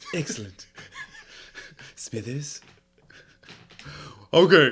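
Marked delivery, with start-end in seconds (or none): 0.1-2.6 hushed, breathy whisper in cartoon-boss voice. Speaker trying a voice for the guys watching along, Mr. Burns impression. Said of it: "this sounds like mister Burns".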